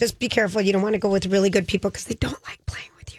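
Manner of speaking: hushed, whispering voice. Giving advice about playing pickleball with strangers, whispering. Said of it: "Why are you whispering?".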